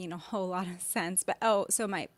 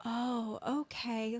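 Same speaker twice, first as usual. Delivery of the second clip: put-on sweet calm voice, higher; 3 semitones higher, 4 dB quieter than usual. Describing how a woman always spoke at home, imitating her sweet, calm voice. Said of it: "that was her voice all the time".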